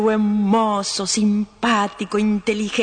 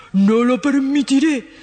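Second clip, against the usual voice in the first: angry booming roar like thunder; 4 semitones higher, 3 dB louder than usual. Narrating a story, voicing the emperor answering the prince, thunderous roar. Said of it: "rugió el emperador con voz de trueno".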